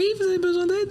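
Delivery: put-on slight, thin, very high little child voice. Retelling what a woman told the speaker, in a thin childlike little voice. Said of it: "une petite voix fluette d'enfant".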